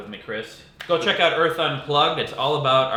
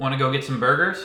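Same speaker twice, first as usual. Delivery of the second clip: tried-out, put-on American accent. Practicing accents, saying a line in an American accent. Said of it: "now let's do some American accents".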